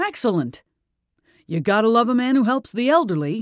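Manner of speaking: brightened, lively, animated, swooping upward lift. Harvey replies to the landlord after hearing the tenant is elderly, brightened up. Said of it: "Harvey brightened noticeably".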